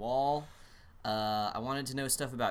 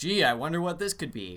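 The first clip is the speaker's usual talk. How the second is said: loud, sarcastic delivery full of irony; 3 semitones higher, 6 dB louder than usual. Retelling how one man reacted on being handed a wrapped gift, mock-sarcastic. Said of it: "John sarcastically goes".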